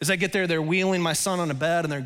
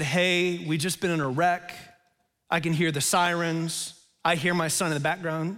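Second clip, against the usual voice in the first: ordinary talk, nothing marked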